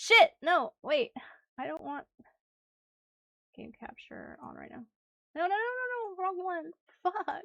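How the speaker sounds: high, panicked, scrambling, flustered outburst. Rushing to reopen a game while people are watching, panicking. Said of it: "I'm like panicking now".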